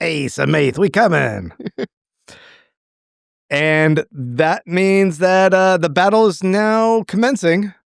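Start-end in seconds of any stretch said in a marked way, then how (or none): 0.0-1.5 gravelly creaking fake voice. Repeating the other speaker's line back to show how it came across, sounding like Cheech Marin. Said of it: "You sounded like Cheech Marin".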